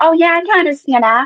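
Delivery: sugary put-on sweetness. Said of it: "a Samantha that appears sweet".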